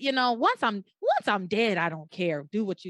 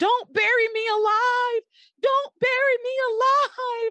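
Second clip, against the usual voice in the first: mock very high, long-stretched, drawn-out yell; 4 dB louder than usual. Retelling a character shut in a closed coffin: imitating Sheridan yelling. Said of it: "yelling in her consciousness".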